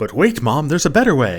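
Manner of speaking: put-on infomercial announcer voice. Imagining the infomercial announcer coming in: infomercial announcer voice. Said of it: "the announcer would come in and say".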